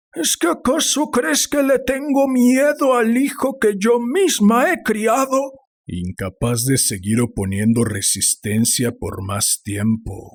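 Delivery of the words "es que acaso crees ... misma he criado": very high, frantic, trembling hysterical shouting. A narrator reads an elderly mother's line to her husband, hysterical and shouting. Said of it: "gritaba la anciana fuera de sí. / gritaba la anciana fuera de sí. / gritaba la anciana fuera de sí. / Lo único que quiero es que mi hijo vuelva a casa, / respondió histérica. ... temblando de excitaci".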